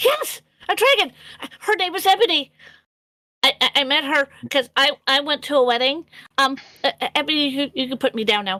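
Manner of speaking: very excited, eager, thrilled kobold creature voice. Narrating a game to the players, speak as the kobold: excited kobold voice. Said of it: "a very excited kobold voice".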